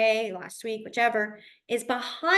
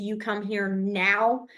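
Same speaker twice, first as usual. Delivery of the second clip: mock stern, no-nonsense voice, drawn out; 2 semitones lower than usual. Retelling a mom calling you in trouble: imitating a mom's final scolding tone. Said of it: "that final tone of".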